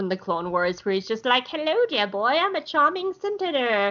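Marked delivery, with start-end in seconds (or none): 1.5-3.9 put-on charming, genteel old gentleman, pitched higher. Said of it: "whipping out his whole charming old man act".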